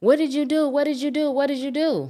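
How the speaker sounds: very high-pitched, repeated screaming. Retelling what a young lady screamed after the shooting: imitating someone screaming. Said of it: "So now I hear her screaming".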